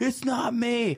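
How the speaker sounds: very high-pitched, mock shouted yell. Retelling a race night, speaker voices Mark answering the speaker's scream: imitating Mark yelling back. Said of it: "And Mark yells back at me".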